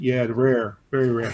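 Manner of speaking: put-on deadpan delivery. Retelling a joking reply to a son about a brick: imitating own deadpan voice. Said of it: "I had that deadpan voice that I do".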